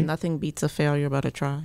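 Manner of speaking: usual speaking voice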